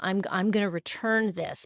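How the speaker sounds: ordinary delivery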